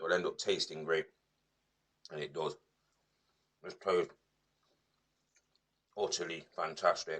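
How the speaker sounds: talking while wolfing down food. Taste-testing a dish on camera, talking while wolfing food. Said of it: "I'm just wolfing this down".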